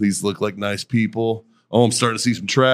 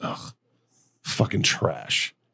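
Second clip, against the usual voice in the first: put-on mutter under breath, quieter; 8 dB quieter than usual. Retelling what a woman on a flight said, imitating a mutter under breath. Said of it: "I hear her under her breath".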